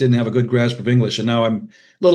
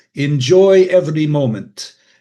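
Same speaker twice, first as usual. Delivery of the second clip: put-on Hungarian accent; 4 semitones higher, 4 dB louder than usual. Quoting a dad's saying: Hungarian accent imitating dad. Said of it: "forgive my Hungarian accent".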